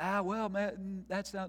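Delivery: mock timid hesitation. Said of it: "tiptoeing into the opinions of others".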